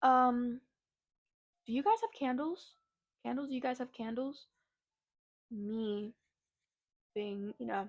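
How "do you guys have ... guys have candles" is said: put-on heavy Spanish accent, laid on thick, rushed. Retelling what a man who came in kept asking, thick spanish accent. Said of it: "He has a very thick Spanish accent".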